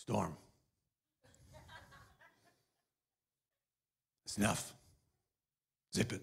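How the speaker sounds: low, curt, terse movie-cowboy tough-guy impression. Play Jesus at the end of the boat addressing the storm, in a Clint Eastwood voice. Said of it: "It's just kind of Clint Eastwood".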